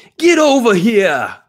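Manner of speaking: very high yell in a Boston accent. Joking about a Boston version of Scorpion: Boston-accent Scorpion. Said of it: "Boston version of Scorpion".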